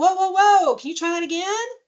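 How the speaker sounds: light, teasing, playful, very high-pitched voice. Demonstrating a response to someone who starts yelling, playful tone. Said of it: "We're kind of keeping a playful tone".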